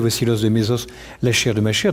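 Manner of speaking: ordinary delivery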